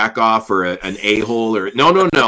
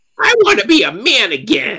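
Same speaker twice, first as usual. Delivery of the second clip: put-on very high, drawn-out small child's voice; 12 semitones higher than usual. A host recapping a scene for a co-host, repeating a character's line in a little kid voice. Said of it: "in the little Kid voice".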